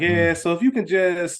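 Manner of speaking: put-on condescending voice. Imitating a character talking down to someone: imitating a condescending voice. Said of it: "Janice got that condescending voice".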